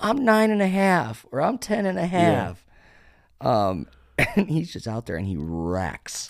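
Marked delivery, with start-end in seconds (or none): 0.0-2.6 put-on squeaky, very high, loud little-kid voice. Describing a young gamer asked his age in chat, imitating a little kid's voice. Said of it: "he sounds like a 10-year-old kid".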